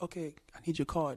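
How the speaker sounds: quiet, calm, unruffled, hushed half-whisper. Retelling a poolside scene, the speaker quotes the waitress: imitating a calm waitress half-whisper. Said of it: "Calm, whispering like a waitress do".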